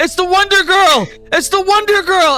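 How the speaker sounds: very high shrieks, shocked and excited, like a crowd. Narrating a scene where onlookers point upward, imitating people screaming. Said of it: "people are screaming".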